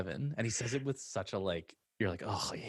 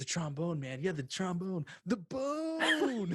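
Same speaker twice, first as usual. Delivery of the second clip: play-acted very high, swooping, thrilled gush; 10 semitones higher than usual. Retelling a bar scene where two guys bond: imitating an excited guy. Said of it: "just getting excited about everything".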